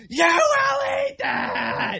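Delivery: imitated screaming. Retelling how a mother at the next table answered her child: imitating a mom screaming. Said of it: "screams right back, screams, top of her lungs".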